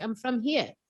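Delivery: put-on Australian accent. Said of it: "I sound like an Aussie".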